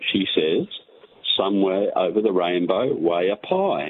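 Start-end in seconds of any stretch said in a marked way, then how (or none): none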